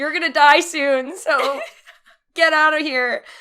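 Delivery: high, acted, furious yell in a fit of rage. Telling how they yelled back at an old woman who insulted them, retelling an angry yell. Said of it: "I yelled".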